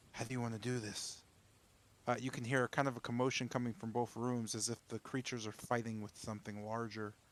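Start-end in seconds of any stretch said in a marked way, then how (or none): 0.1-1.2 hushed whispering voice. Voicing a character who turns to Wolfram and asks how to proceed: whispering.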